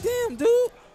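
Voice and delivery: very high, mock surprised exclamation.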